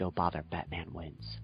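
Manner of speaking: hushed, very quiet, secretive confiding aside. Retelling what another person said to him in confidence: imitating someone speaking quietly. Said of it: "and he gets real quiet".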